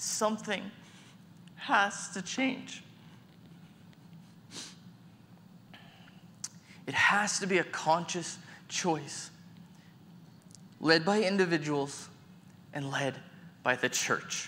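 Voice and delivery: moved, pleading tone. Speaker sharing something they wrote about loneliness, getting emotional. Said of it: "I'm getting emotional sharing this".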